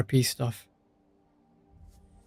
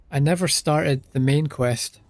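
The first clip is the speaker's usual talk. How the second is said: ordinary delivery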